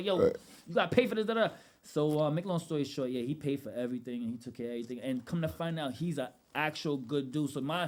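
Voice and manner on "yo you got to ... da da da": loud, aggressive, confrontational tone, raised in pitch. Retelling demanding payment from a bigger driver: retelling an aggressive tone. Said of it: "so I had to keep the same energy".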